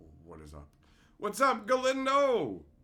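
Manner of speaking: mock confusion, high pitch. Retelling how a confused man reacted, imitating a confused voice. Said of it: "I could literally hear the confusion in his voice".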